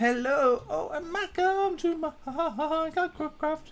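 very high, slow, drawn-out silly voice.

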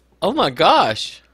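strange, oddly bent, off-kilter intonation. Reacting to a story about lost chocobos: weird inflection. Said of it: "you're saying that with such a weird".

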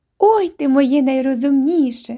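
delighted exclamation. A mother reacts to her baby son stuffing his foot in his mouth, exclaiming in delight. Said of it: "в захваті вигукнула мати".

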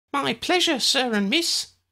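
very high, squeaky, chirping elf voice. Narrator reading the elf's reply to Ambrose and Lydia, squeaky chirruping elf voice. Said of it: "she saw another elf. He was like the one they had seen in the ministry, but had curly brown hair in a clump on the top of his head, and was wearing a green uniform. ... a squeaky voice announced with each knock. ... the elf chirruped".

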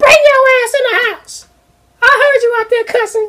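mock very high, shrill, full-volume yelling. Imitating a mother calling a kid in from the playground: imitating a mother yelling at full volume. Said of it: "she yelled to the top of her lungs".

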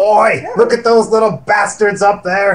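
high, loud, carrying shout. Player in character, spotting bats hanging from a cave ceiling: shouting. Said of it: "You're shouting".

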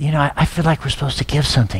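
hushed, quiet half-whisper. Retelling half-whispering to his wife at a luncheon: retelling a half-whisper. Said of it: "I just whispered".

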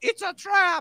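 very high alien voice, startled like a squid.

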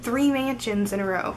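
ordinary delivery

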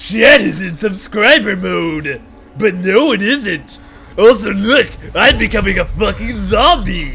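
booming, loud, high, brash character voice. Responding to chat about subscriber mode, the speaker talks in Muscle Man voice. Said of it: "That kind of degraded away from Muscle Man".

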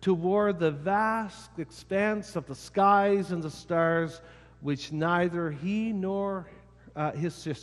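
ordinary delivery

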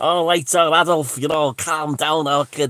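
loud, high, put-on Scouse accent. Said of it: "I've always put on Derek Acorah's Scouse accent".

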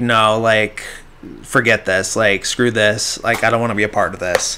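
ordinary delivery

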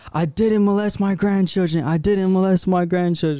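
crazed, high-pitched screaming cry, repeated over and over. Describing hearing Jeff in the kitchen, imitating Jeff screaming. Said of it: "He's in the kitchen screaming like".

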